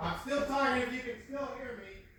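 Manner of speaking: very high yell heard from a distance. Walking away to fetch paper, still talking to viewers: yelling from another room. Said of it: "I'm yelling all the way back".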